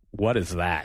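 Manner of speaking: put-on dismissive tone. Retelling how she reacted on seeing the game, in a mock-dismissive tone. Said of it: "in the most dismissive tone possible".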